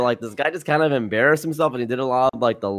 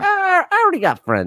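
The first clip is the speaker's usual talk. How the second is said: dumb put-on voice, higher pitch. Imitating Jay Leno talking about choosing between friends and money: Jay Leno impression. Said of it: "the universal Jay Leto impersonation".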